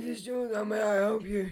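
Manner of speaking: put-on voiceless, lost-voice speech. Retelling answering a call at work after losing voice: imitating own lost voice. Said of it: "I didn't have a voice".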